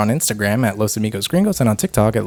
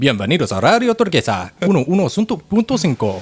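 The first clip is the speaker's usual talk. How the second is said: pitched-up, Spanish-language Mexican radio announcer voice; 5 semitones higher than usual. Showing how they could be a mexican radio announcer: mexican radio announcer voice. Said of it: "a Mexican radio announcer".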